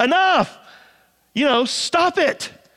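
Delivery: exasperated outburst. Retelling a parent stopping children fussing all day: imitating an exasperated parent. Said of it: "just out of exasperation".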